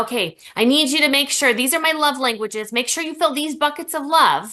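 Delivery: put-on snide, sarcastic, demanding tone. Acting out someone demanding their love buckets be filled: sarcastic mock demand. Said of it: "I am being sarcastic".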